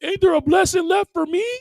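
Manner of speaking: very high, high-pitched crybaby whiny wail. Retelling a scripture story, voicing a brother begging his father: imitating a crybaby's whiny cry. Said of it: "he cried out to Isaac".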